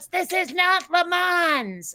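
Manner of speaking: acted high yell with the word "Mans" drawn out. Retelling a movie scene where a character shouts at passing cars: imitating someone shouting. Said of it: "And he shouts".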